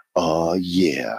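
low, drawn-out, super sexy purring voice.

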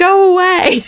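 acted, very high-pitched, shrill shout. Retelling an awful meeting where people yelled at them, imitating someone yelling. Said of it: "somebody else yelled".

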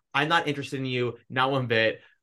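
plain

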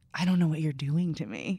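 whispered. Retelling what she whispered to him: imitating a whisper. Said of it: "whispers to him".

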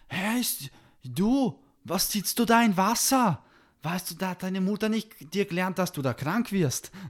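put-on shrill, very high, loud kid's yell. Retelling how a man yelled at a boy sitting in water: retelling a man shouting. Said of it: "er schreit so".

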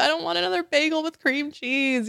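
very high, crying, tearful wail. Retelling crying at the open fridge: imitating her own crying. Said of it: "open the fridge and just, like, cry".

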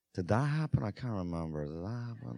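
very soft, hushed stage whisper under breath. Retelling what a man kept half-whispering to another man: retelling a half-whisper. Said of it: "he just kept whispering to Greg".

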